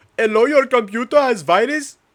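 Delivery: booming, shrill, high-pitched put-on Indian accent. Speaker shows off their accent as a computer-virus phone call: Indian accent. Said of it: "My Indian accent's actually good though".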